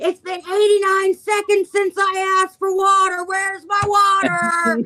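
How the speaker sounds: put-on, very high, shrill, lung-bursting loud scream. Recalling being locked alone in a hospital room, retelling screaming at the top of lungs. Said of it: "screaming at the top of my lungs".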